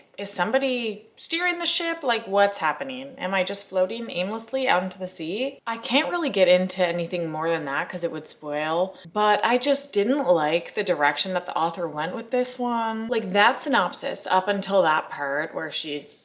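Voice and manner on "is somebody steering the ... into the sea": normal talking voice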